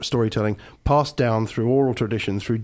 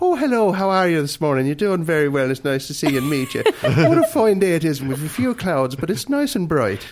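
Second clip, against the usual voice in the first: high Irish accent, laid on for show; 5 semitones higher than usual. Speaker showing how people talk in different regions, here Ireland: Irish accent. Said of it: "cross the channel and go to Ireland".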